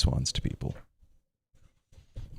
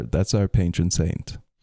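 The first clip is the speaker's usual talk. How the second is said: plain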